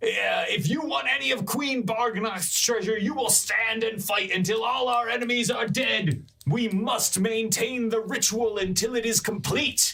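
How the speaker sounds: shrill, very high goblin voice, yelling. A game master voices a goblin carrying a chest: goblin yelling orders. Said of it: "he's like yelling orders to people".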